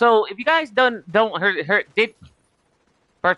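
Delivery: stumbling over words, stammering, repeating words. Talking to the audience while full of caffeine, stuttering. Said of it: "I gotta stop stuttering like Porky Pig because I'm in".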